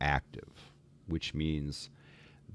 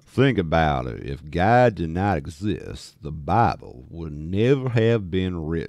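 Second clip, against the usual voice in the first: very loud, slow, deliberate, booming fake Texas accent; 9 dB louder than usual. Showing viewers an attempt at a texas accent: put-on texas accent. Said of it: "here's my Texas accent".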